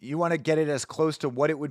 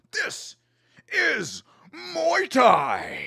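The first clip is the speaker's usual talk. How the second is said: very high, swooping dramatic announcer call after pause; 11 semitones higher than usual. Reacting to a muay thai fight announcer, imitating his dramatic pause. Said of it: "He really hit him with the dramatic pause".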